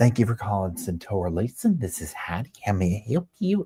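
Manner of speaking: cute, sweet, adorable phone voice. Showing how she answered a call you had missed, imitating Heidi's adorable phone voice. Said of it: "And she literally talked just like that. It was so adorable".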